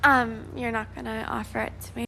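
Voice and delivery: put-on very high, babyish baby talk voice. Speaking to viewers watching the video, in a baby voice. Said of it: "Baby talk".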